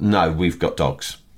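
completely flat, deadpan, expressionless put-on delivery. Speaker retelling someone's answer when asked if they had kids, a completely deadpan reply. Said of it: "said completely deadpan".

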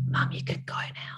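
put-on soft, breathy, hushed child's whisper. Retelling what the little one whispered on the first school day: imitating a whisper. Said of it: "And he whispers".

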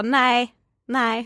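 mock-cocky, sassy, put-on delivery. Retelling answering a guy's question at lunch in the cafeteria: retelling a cocky no. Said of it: "så här kaxigt".

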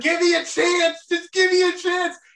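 put-on screaming. Retelling being hit with a pool noodle, the speaker acts out screaming while nearly drowning. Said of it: "you're and screaming".

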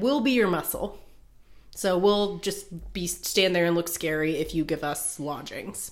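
ordinary talk, nothing marked

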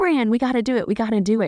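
put-on, keyed-up, eager, excited tone. Quoting him as he pushes to buy the windy land, imitating his excitement. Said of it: "he's all excited".

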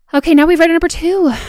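out-of-breath voice. Host reading submissions aloud to everyone, out of breath and panting. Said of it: "Sorry, I'm panting".

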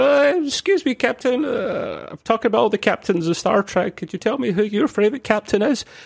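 very high-pitched, squeaky, halting voice. Retelling a convention question to a captain, imitating Robert Duncan McNeil's squeaky voice. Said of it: "someone with a really squeaky voice asked her a question".

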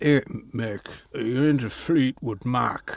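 terrible put-on Irish accent slipping into Yorkshire. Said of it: "he was not from Yorkshire".

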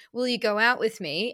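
plain

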